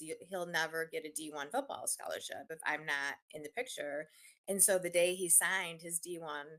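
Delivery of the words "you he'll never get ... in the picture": plain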